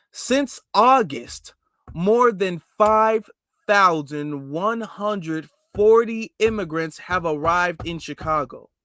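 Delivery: slow reading aloud. Reading a figure aloud to the audience, reading slowly. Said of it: "I'm gonna read this slow".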